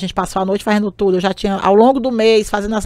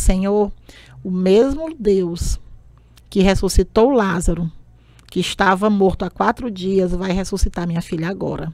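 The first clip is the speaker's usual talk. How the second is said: ordinary talk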